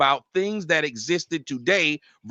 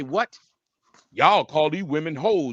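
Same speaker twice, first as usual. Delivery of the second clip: mocking put-on voice. Retelling a guest's words with contempt: mocking imitation of a guest. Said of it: "you wanted to come up here and say".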